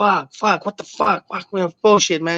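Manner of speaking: half-yelled outburst. Retelling how a man drinking beer beside him suddenly got up, imitating someone yelling. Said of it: "gets up and starts yelling like".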